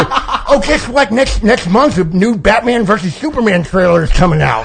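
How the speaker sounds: high, eager nerd voice. Showing the voice he uses to annoy his wife: basement science-building nerd voice. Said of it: "basement of the science building nerd voice".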